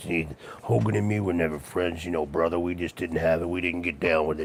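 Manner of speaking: very hushed, really deep put-on voice. Describing a wrestler whose ring voice damaged his real voice, imitating a really deep voice. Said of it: "He had a really deep voice like this".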